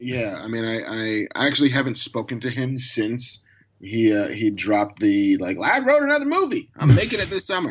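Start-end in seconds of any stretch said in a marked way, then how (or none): 5.6-7.7 put-on drawling filmmaker voice, pitched higher. Retelling a movie announcement: Kevin Smith impression like Colonel Sanders. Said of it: "my Kevin Smith impersonation went like Colonel Sanders".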